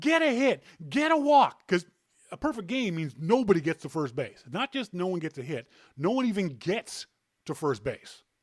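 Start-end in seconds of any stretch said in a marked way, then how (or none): 0.0-1.7 mock very high, stretched-out, drawn-out shouting. Retelling watching a perfect game in a hotel room: imitating own screaming at tv. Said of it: "screaming at my T V, yelling at the Expos".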